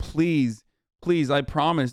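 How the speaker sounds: mock tearful, crying, pleading voice. Mocking the speaker in a played clip: imitating someone begging and crying. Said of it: "on his hands and knees begging, crying".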